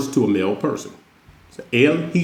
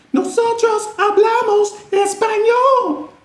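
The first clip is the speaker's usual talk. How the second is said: very high, raised put-on feminine voice. Teaching Spanish plurals, imagining an all-female group, in a raised voice. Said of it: "Maybe I should try to raise my voice to imagine".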